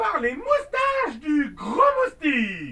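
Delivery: very loud, ringing cry. Reading a fairy casting a spell as she points her wand: crying out. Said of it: "s'écria".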